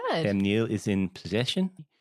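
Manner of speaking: New Zealand accent with rising phrase endings. Trying a New Zealand accent with rises at the ends of phrases. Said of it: "can I do a New Zealand accent? ... you just have to go up at the end of every like few words".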